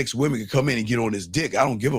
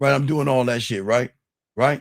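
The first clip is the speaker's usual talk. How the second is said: ordinary delivery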